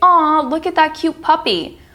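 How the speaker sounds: high, soft cooing voice.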